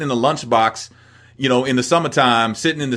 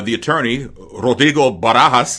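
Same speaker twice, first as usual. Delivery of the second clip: put-on accented TV news anchor voice, slower. Recalling a legendary Saint Louis TV anchor, do Julius Hunter with the accent. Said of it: "he would say it with the accent".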